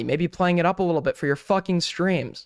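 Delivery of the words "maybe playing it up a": usual speaking voice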